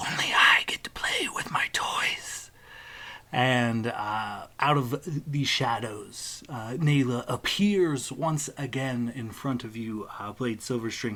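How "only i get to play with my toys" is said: put-on whispered in a much higher young woman's voice. Narrator voicing a young woman whispering behind the player, young woman's whisper. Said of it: "a young woman whispers".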